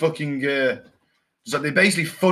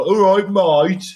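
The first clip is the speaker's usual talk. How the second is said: put-on loud, proper Birmingham accent; 4 semitones higher, 6 dB louder than usual. Describing a man he once knew from his reserve unit, in a Brummie accent. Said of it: "he was a proper brummy".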